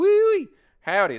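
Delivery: put-on heavy southern accent, very loud and high holler. Imitating Texans who grew up a street away: super southern accent. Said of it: "they like super southern".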